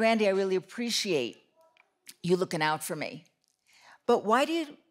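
ordinary talk, nothing marked

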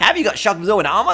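mocking light, nasal voice. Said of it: "I sound like a little weenie".

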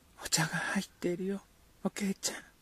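high, soft, murmured whisper under the breath. A mother calls to the sick one by name, whispering. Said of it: "ささやき声でこう呼びかけた".

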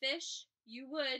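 plain

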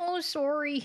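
sorry said in a put-on Canadian accent. Showing how they used to say it, in a Canadian accent. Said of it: "That's how I used to say it".

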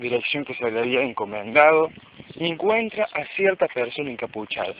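plain

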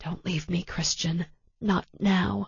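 whispered quietly. Beside a man on a gurney, a woman speaks for his ears alone, whispered. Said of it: "she whispered for his ears alone".

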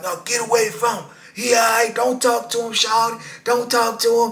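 mock, high, yelled-out street holler. Retelling a man yelling from the fence at others: imitating someone hollering. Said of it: "you can hear him holler".

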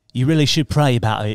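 put-on British accent. Continuing the Holy Spirit bit in a British accent. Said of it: "The Holy Spirit talks to you in a British accent".

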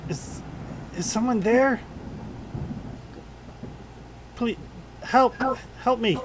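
very frightened voice. Narrating to players, voicing someone sobbing in the orchard; very frightened voice. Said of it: "a very frightened voice saying".

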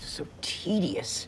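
very quiet, breathy, whispered exasperated sigh. In a played clip from the show, sighing.

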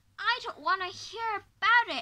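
very loud shouted cry. A grandchild cuts off his grandmother as she keeps talking, cried out. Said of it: "cried George".

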